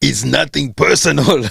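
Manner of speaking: weak, rough, creaky action-hero voice. Giving a movie line for others to guess, in the main actor's voice. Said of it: "voice of the the main uh, actor".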